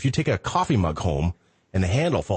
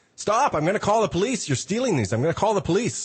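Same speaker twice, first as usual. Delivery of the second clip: very high, shrill, high-pitched yell; 12 semitones higher than usual. Retelling the manager threatening to call the police: imitating the manager yelling. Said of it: "the manager yells at me".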